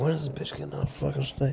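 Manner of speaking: annoyed under-the-breath mutter. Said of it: "and I was like".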